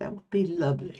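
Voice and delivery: not-quite British accent. Repeating a line in their best british accent, attempted british accent. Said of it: "In my best British accent".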